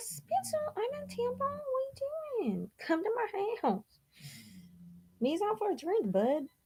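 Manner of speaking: put-on cutesy, very high baby-talk pet voice. Retelling a message to someone, in the voice her sister-in-law uses for her dog. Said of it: "the voice that my sister in law does for her dog".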